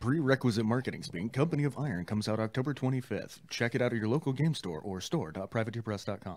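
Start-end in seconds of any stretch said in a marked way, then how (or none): 1.3-6.4 ad-read commercial announcer style. Slipping into marketing speak mid-conversation, in a commercial announcer voice. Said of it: "It disturbs me how well I do that voice".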